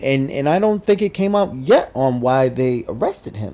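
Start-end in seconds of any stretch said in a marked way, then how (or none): none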